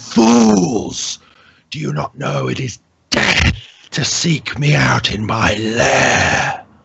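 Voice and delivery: slow, sibilant, rasping creature hiss with swooping pitch. Narrating a scene, the speaker voices her as her maw opens: rasping, sibilant voice. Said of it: "you hear like this rasping, sibilant sound".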